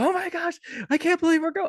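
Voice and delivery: very high joyful shriek, almost crying. Retelling her reaction on learning they're going to see Hamilton, imitating someone screaming excitedly. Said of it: "Screaming, hugging, like almost crying".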